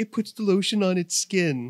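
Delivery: put-on high, loud baby talk voice. Retelling how he baby-talks to his dog, in a baby voice. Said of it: "he goes in like the baby voice".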